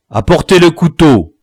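authoritative voice. A man orders the knife brought as a captive pleads, commanding. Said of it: "commanda Le Braque".

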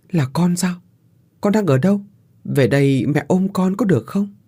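quavering, shaky voice. A mother answers her child's voice calling out of the emptiness: trembling voice. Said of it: "Cô đáp lại giọng run run".

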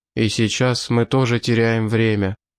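ordinary delivery, nothing marked

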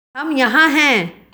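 croaky, dry-mouthed. Ori answers a voice calling from afar, in a hoarse voice. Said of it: "ऑरी ने कर्कश आवाज़ में कहा।".

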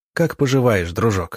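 usual speaking voice

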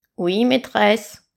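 harsh, scraping, grating, rasping goblin creature voice. A yellow goblin answers its mistress at the door in a grating goblin voice. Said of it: "grinça l'effroyable gobelin jaune".

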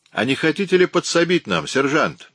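teasing, sarcastic tone. Narrator reads a man's question to the sergeant: mocking question. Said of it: "насмешливо поинтересовался Уэнт".

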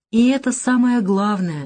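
tender, gentle delivery. A woman answering a man who says he just feels good, tender. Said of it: "нежно сказала Наташа".

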